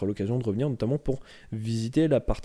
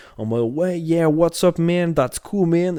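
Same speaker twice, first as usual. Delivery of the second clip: loud, high, put-on American street accent; 5 semitones higher, 6 dB louder than usual. Describing a comical American, imitating how he talked: American accent like Franklin from GTA. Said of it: "vraiment avec son accent un peu comme euh".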